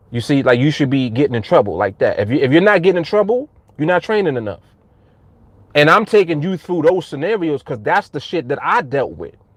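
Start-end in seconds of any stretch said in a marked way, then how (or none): none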